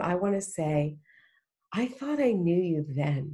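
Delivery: ordinary delivery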